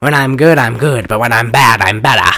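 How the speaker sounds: put-on film-star delivery in a New England accent. Doing a Mae West impression after mentioning her: Mae West impression. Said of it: "I do a perfect Mae West".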